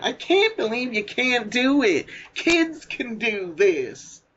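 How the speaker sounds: high, drawn-out, whiny, nagging tone. Walking away from the pool, recalling a woman by imitating her whiny voice. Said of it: "she was still that whiny voice".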